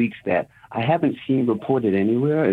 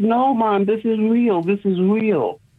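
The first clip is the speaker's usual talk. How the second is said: play-acted crying, very high, slow and pleading; 11 semitones higher than usual. Recalling a man's reaction to the plane hitting the tower, imitating someone crying. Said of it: "And he's crying profusely".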